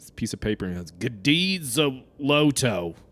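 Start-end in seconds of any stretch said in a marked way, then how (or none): 1.2-2.9 put-on old, gruff, elderly voice. Retelling what a man said, imitating his old gruff voice. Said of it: "you just hear an old gruff voice that goes".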